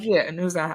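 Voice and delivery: ordinary talk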